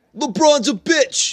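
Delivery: very high, slow, squeaked-out impression voice. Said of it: "That's my Michael Rappaport impression".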